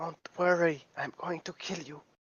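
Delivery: put-on hushed, soft half-whispered baby-talk voice. Player's character half-whispers to a tangled creature trying to rip itself free, half-whispering. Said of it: "I will whisper to it".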